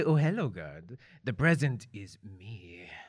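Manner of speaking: flirtatious. Playing a character who pops out of a box to seduce the guard: seductive. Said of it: "I pop out and I look so seductive".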